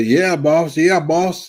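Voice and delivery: placating, sarcastic tone throughout. Retelling own past replies to a boss: imitating own sarcastic agreement. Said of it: "I was being sarcastic with it".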